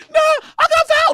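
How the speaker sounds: put-on very high, very slow, drawn-out small-child voice. Describing a pickup basketball game, acting out a complaining player: imitating a five-year-old kid.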